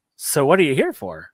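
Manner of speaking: tiny, quick, squeaky, very high-pitched voice. Narrating a huge man who walks over and grins, high-pitched voice from huge body. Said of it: "really high pitched voice coming out of this huge body".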